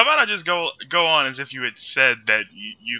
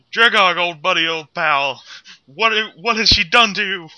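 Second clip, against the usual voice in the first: fake crying with the voice up high; 5 semitones higher than usual. Kneeling with a fallen Dragog held in his arms, the character starts fake crying. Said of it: "start faking crying".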